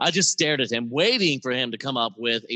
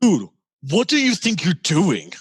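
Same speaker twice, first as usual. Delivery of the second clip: startled, shocked outburst, raised and high; 6 semitones higher, 6 dB louder than usual. Reading a story aloud, voicing a character's reaction: shocked tone. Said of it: "His shock tone".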